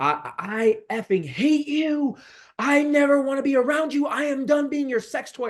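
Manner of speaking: acted-out, high-pitched, shrill, furious, top-of-the-lungs screaming. Retelling screaming at an aunt at the door: retelling own screaming. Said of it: "I started screaming at the top of my lungs".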